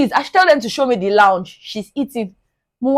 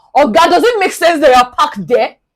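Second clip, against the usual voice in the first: hard, heavy acted shout pitched high; 5 semitones higher, 4 dB louder than usual. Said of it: "you now shouted heavily at this".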